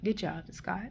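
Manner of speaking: acted whisper. Recapping a show, acting out a character whispering to scott: retelling a whisper. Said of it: "he whispers".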